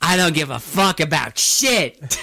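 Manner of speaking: unhinged ranting voice. Retelling a movie scene where a character rants: imitating an unhinged rant. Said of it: "he goes on this rant".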